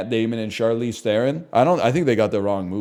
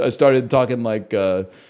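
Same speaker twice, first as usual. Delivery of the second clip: ordinary talk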